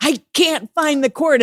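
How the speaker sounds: acted, high, frantic, panicked yell. Up high and nearing the dock, the speaker retells yelling to the guys below. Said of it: "I'm yelling at these guys going".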